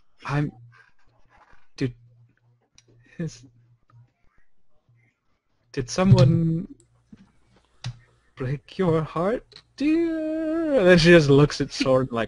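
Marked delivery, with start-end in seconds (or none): 0.3-10.8 fumbling, halting, awkward, slow, pitched-up comforting tone. Voicing a woman who awkwardly pats a crying character: awkward, fumbling comfort. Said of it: "very, very awkwardly just patting you on the back slowly and saying".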